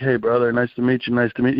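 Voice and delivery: ordinary talk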